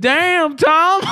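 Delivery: put-on very high, American vernacular accent.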